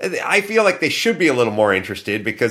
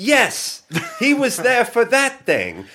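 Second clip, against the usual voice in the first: put-on English accent, pitched high. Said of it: "I'll try to do her fake accent".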